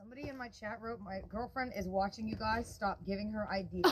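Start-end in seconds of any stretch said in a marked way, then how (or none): none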